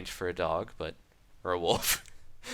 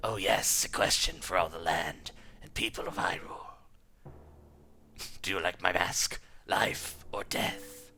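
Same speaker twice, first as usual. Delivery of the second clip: serpent-like, snaky evil villain voice. Reading a hyrule story aloud, voicing the masked villain in a snaky villain voice. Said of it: "I think he would have kind of like a snaky voice".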